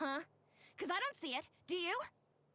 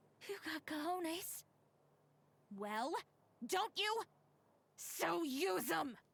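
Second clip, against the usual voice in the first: seething, ire-filled, angry tone; 3 semitones higher than usual. A woman character addresses the men around her: angry. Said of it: "you can hear the ire in her voice".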